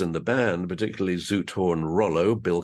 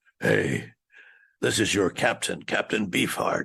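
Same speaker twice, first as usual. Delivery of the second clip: gruff, creaky, rough-edged rasp. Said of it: "a gruff voice said".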